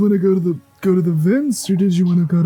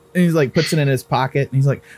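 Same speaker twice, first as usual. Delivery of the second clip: normal talking voice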